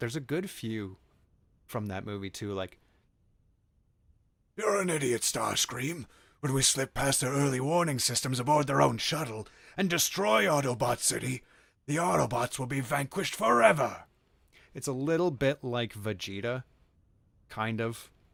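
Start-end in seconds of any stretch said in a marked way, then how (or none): 4.6-14.0 loud, rough, raspy cartoon-villain voice, pitched up. Doing voice impressions on camera, quoting a movie line in a raspy Megatron voice. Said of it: "that raspier voice".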